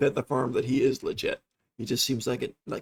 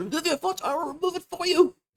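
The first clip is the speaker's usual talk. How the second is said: agitated, worked-up, very high-pitched delivery. Voicing a character at a door who pulls a dagger: agitated. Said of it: "He seems very agitated".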